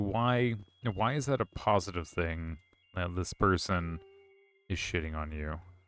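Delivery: ordinary talk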